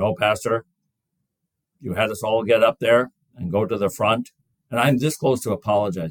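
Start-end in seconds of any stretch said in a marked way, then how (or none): 0.2-4.3 grave, solemn, dead-serious tone. A pastor retells what a congregant with a cane told him, in a very serious voice. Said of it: "He said in a very serious voice".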